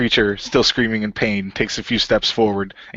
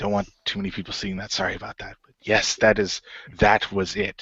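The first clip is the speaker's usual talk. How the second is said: hushed, furtive, secretive yet courteous tone; 4 dB quieter than usual. A cloaked man who has just received something valuable speaks to the adventurers, careful not to be overheard; furtive, polite. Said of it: "The cloaked man looks at them quizzically as they whisper among themselves. / The man throws a cloth over it and puts it in his bag".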